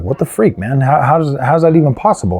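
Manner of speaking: normal talking voice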